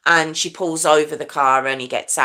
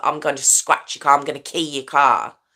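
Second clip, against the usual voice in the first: put-on threatening voice. Retelling a girl threatening to key his car: imitating a threatening voice. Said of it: "Very threatening girl".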